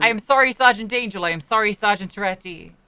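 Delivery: unconvincing, insincere delivery. Apologizing to two sergeants when told to: insincere apology. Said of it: "That doesn't sound very sincere".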